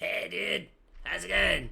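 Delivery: mock gravelly, creaky voice. Doing a voice for the other speaker to guess: Steve-O voice. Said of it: "if I did this voice".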